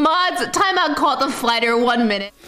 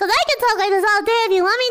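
higher-pitched, put-on high voice. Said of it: "You want a higher pitched voice like this?".

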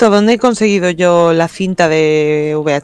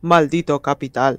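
grave, solemn, deep, serious voice; 4 semitones lower, 6 dB quieter than usual. Imagining how someone would say a line, in a mock-serious voice. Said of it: "Yo creo que habla más así, ... es como más serio".

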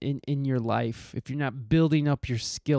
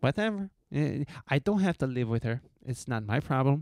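terrible put-on Mexican accent, bluntly dismissive. Imitating an unintentionally funny woman, in a terrible Mexican accent. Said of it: "that's my terrible Mexican accent".

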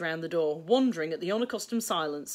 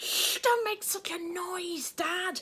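angry, furious hushing hiss, pitched up; 12 semitones higher, 4 dB quieter than usual. A boy hushes his father, just home from work, hissing furiously. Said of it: "hissed Charlie furiously".

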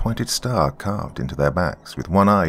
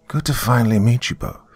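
easy, light, gentle voice; 4 semitones higher than usual. A captured man greets the two detectives, light, gentle voice. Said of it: "he said in a light, gentle voice".

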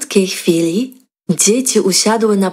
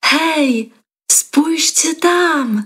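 abrupt, sudden, high call-out with "tam" stretched; 8 semitones higher than usual. Reading a story, a pupil at a waterfall calls to everyone: called out suddenly. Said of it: "Nagle Alda zawołała".

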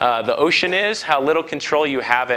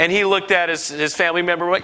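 ordinary delivery

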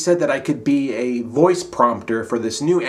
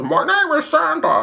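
put-on very high, slow, slightly drunk drawl. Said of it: "I would talk like this. ... Kind of like a Jimmy Stewart who's a little bit drunk".

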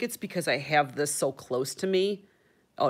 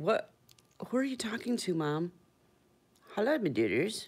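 pet dog character voice; 4 semitones higher, 5 dB quieter than usual. Showing the camera the staring dog, voicing her dog. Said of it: "staring at me going".

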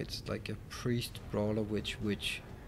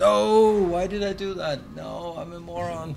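very loud, high, drawn-out shout; 8 semitones higher, 11 dB louder than usual. Playing a game, reacting to own move in a hallway fight, shouting. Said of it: "sorry for the shouting".

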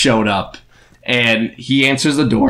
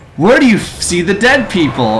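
put-on cartoon girl voice, higher; 9 semitones higher, 4 dB louder than usual. Playing a game after a viewer asks: Dora the Explorer voice. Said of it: "I'm gonna try and talk like Dora the Explorer".

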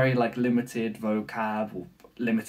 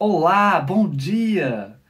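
exaggerated, sing-song Brazilian Portuguese accent, dia drawn out; 6 semitones higher, 5 dB louder than usual. Showing how you speak Portuguese to keep it apart from Spanish: over-exaggerated Brazilian Portuguese accent. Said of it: "I over-exaggerate".

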